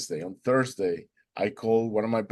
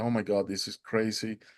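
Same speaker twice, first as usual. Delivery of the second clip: speaking in a crying voice; 3 dB quieter than usual. Retelling being overwhelmed by a painting: retelling own crying. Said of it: "So I started crying".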